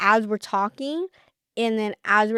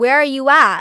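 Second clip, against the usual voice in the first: loud, forceful yelling; 4 semitones higher, 8 dB louder than usual. Retelling how the other came storming up: imitating someone yelling.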